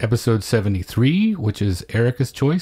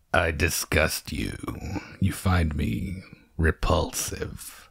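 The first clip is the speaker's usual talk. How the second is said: acted, put-on beast character voice; 7 semitones lower, 7 dB quieter than usual. Reading a scene with a partner, play the Beast in a Beast voice. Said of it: "Should I use my beast voice for this one?".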